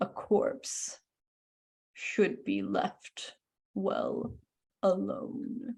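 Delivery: whispered, grumbling undead corpse voice. Narrating a game, voicing a corpse that grabs the player: grumbling corpse voice. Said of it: "grumbles at you".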